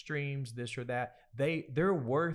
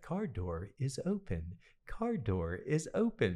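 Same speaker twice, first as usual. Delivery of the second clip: put-on little lady alert voice. Describing the voice alert in the car's dashboard, in a little lady car voice. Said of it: "her little voice was like".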